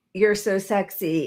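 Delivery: imitated whisper. Retelling what he said into her ear: imitating a whisper. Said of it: "whispering in her ear".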